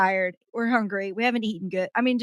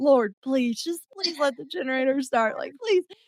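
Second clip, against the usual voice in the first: intense, repeated begging and pleading; 4 semitones higher than usual. Retelling praying that the generator would start: retelling a pleading prayer. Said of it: "I'm down there literally praying".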